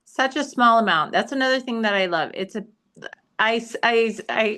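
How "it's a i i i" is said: halting, very slow, stuttering stumble. Praising a moisturizer in conversation, stuttering. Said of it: "I'm like stuttering".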